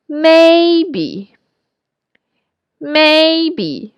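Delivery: high, drawn-out voice at top of range. Teaching listeners to find the upper range of their speaking voice, high voice. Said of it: "So may with a high voice".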